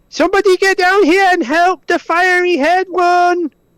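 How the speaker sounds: very high shout. Calling out in character for someone to come help: shouting for help. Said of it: "he's gonna lift his head up and just shout".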